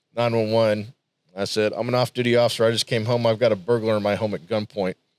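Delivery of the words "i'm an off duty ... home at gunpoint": ordinary talk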